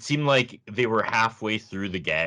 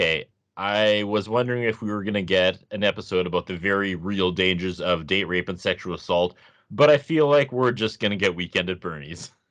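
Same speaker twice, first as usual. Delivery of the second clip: ordinary delivery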